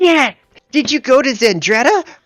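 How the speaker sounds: eager, excited, very high and loud outburst. Voicing a wizard meeting a fellow wizard: excited. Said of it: "his eyes will light up".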